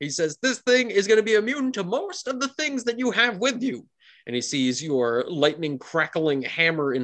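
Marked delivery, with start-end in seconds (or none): 0.4-3.9 loud yelling, pitched higher. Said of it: "he starts screaming out".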